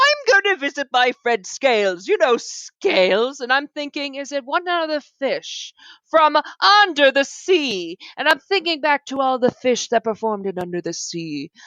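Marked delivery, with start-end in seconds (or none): 0.0-3.4 play-acted haughty, pompous, puffed-up voice. Acting out a character's line about visiting a friend: pompous voice. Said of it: "so I'm gonna do pompous".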